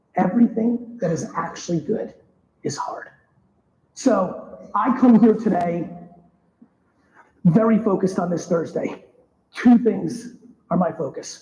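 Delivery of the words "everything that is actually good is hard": slow, deliberate, each word emphasized. Speaking to everybody, the speaker repeats a key point, saying it slow. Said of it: "I'm gonna say it slow".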